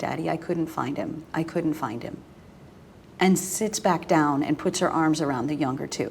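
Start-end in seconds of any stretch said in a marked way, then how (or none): 0.0-2.2 mock crying and sobbing, quieter. A parent retells their oldest daughter coming back in; imitating a daughter crying. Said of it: "she's crying".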